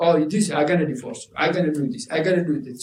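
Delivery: ordinary delivery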